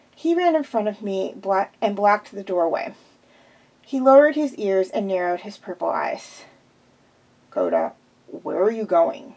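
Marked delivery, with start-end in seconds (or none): 7.5-9.2 low voice, almost a growl. A character blocks the narrator's way at the door, almost growling. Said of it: "almost growling".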